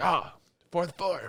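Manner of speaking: put-on, deliberately very manly hero-style voice. Imitating an anime character's line in a very manly voice. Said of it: "It is a very manly voice".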